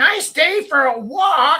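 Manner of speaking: very high, stretched-out, drawn-out yell. Retelling how a woman in a park shouted at them: imitating a woman yelling. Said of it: "she starts yelling at us".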